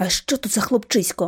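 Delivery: in a whisper. The narrator asks her companion a question, whispered question. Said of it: "пошепки спитала я".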